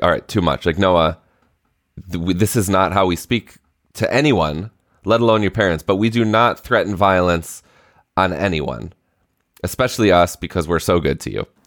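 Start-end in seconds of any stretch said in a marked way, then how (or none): none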